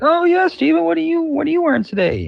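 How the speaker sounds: very high, gabby, chatty weatherman voice. Retelling early morning chit chat with a talkative weather person: imitating a chatty weather person. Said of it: "he'd be like".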